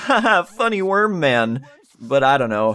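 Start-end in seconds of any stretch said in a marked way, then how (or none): 0.0-1.7 very slow, deliberate, forced fake chuckle. Joking about how to react to a game character: fake laughing. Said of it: "I should be laughing like".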